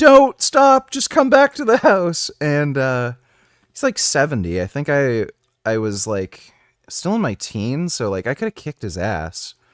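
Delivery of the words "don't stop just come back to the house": very loud, very high, shrill screaming. Recounting an old man's outburst, quoting his wife screaming at him: imitating someone screaming. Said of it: "his wife was like screaming at him".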